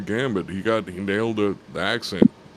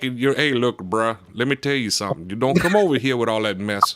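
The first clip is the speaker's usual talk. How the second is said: put-on, mock Cajun accent. Speaker critiques an actor's Louisiana accent, demonstrating a Cajun accent. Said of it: "those guys down there are really Cajun".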